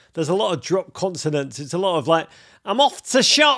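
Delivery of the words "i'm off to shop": put-on high, loud Leeds accent. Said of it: "it's got a distinct accent".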